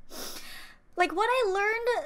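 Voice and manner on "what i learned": high, loud voice holding back tears. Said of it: "I'm trying not to cry".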